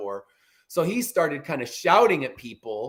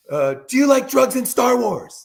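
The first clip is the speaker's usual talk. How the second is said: high-pitched, loud screaming. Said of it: "starts screaming it at everybody".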